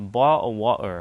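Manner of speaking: clumsy, slow, terrible put-on British accent. Showing the british accent they say they can't do: bad british accent. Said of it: "I don't have like the British accent. I can do uh bottle wa- water".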